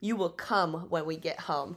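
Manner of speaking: imitated whispering. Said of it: "he whispered to her".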